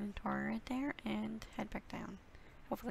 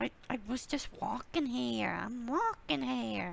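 put-on Boston accent, louder and slower; 2 semitones higher, 7 dB louder than usual. Talking over a game episode, the speaker breaks into a Boston accent. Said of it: "A very good Boston accent".

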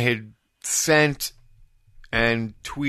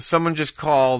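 ordinary talk, nothing marked

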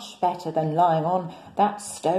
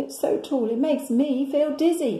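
laughing, pitched-up delivery; 7 semitones higher than usual. The lion replies to Jack at St Paul's Cathedral, laughing. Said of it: "laughed the lion".

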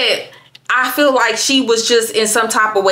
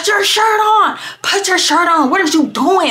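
mock hollering, pitched up; 9 semitones higher than usual. Retelling friends yelling at a drunk friend: imitating someone yelling. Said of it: "literally yelling at her".

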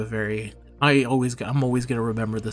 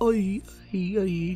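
awful put-on pirate accent, very high pitched; 9 semitones higher than usual. Describing a running joke in videos, doing a terrible pirate accent. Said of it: "one of the worst pirate accents".

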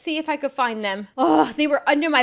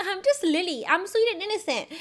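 high, fake sweet and innocent voice; 6 semitones higher, 5 dB quieter than usual. Before going in to see the principal, putting on a fake sweet innocent act. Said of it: "put on the sweet act and be like".

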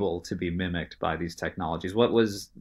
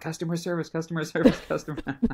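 mock, shrill, very high, repeated yelling; 10 semitones higher than usual. Describing a poor customer on the phone stuck in a loop, imitating a customer yelling. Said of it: "just yelling".

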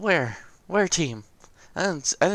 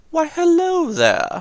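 shrill, booming, belted out high and loud; 12 semitones higher, 8 dB louder than usual. Reacting to sinking an enemy ship: Obi-Wan voice. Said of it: "Do your best Obi-Wan voice".

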